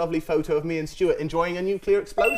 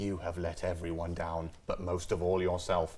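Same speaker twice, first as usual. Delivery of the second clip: very quiet, slow, deliberate stern delivery; 11 semitones lower, 10 dB quieter than usual. Recalling a speech they used to get, quiet voice. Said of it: "when they do the quiet voice".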